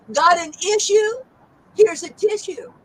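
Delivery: high, snide, sarcastic tone. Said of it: "So this is a sarcastic joke".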